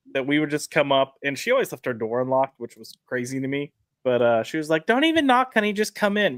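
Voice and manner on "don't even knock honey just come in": put-on New York accent, higher. Retelling what a neighbor in the building used to say, imitating Hillary's New York accent. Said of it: "you got to think of a New York accent".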